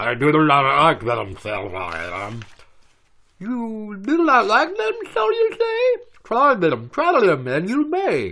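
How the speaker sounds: voice as if under water. Reading a book aloud after being told to do it underwater: underwater voice. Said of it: "you gotta do it in an underwater voice".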